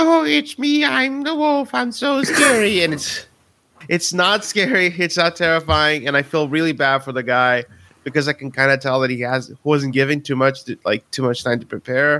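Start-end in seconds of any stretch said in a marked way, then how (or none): 0.0-2.8 put-on very high, slow, drawn-out babyish voice. Mocking an actor playing a werewolf who sounds like a baby: imitating an actor sounding like a baby. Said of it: "he sounds like a baby".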